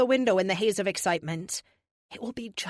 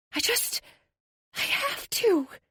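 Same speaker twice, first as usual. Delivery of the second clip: very high, slow, drawn-out whisper; 13 semitones higher than usual. Reading a story aloud, the narrator pleading to save someone: whispering. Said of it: "I say that last part in a whisper".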